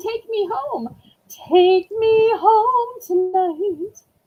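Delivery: attempted frog voice, slow and high. Voicing Shorty asking to be taken home: attempted frog voice for Shorty. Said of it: "I can't do a frog voice".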